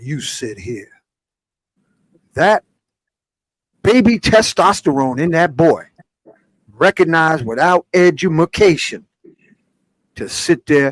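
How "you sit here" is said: very quiet, soft, dropped low voice. Retelling grabbing a boy and seating him: imitating own lowered voice. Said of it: "dropped my voice and said".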